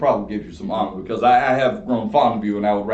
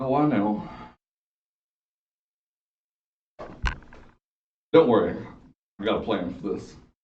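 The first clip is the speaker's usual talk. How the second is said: quiet whisper broken by laughter; 5 dB quieter than usual. Answering another player in character about the watching tax collector: whispering while laughing. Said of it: "Said that in a whisper laugh".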